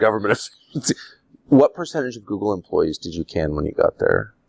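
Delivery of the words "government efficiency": slightly sinister put-on voice. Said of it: "make it sound a little sinister".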